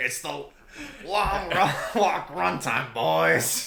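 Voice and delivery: high, booming, slow, drawn-out voice. Doing an impression while announcing the film's runtime: Mark Hamill impression. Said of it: "an imitation of Mark Hamill".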